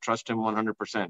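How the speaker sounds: ordinary delivery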